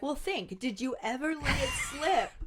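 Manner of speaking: put-on sarcastic tone. Retelling a scene, quoting Harry's reply: imitating sarcastic Harry. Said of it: "still with the sarcasm, is like".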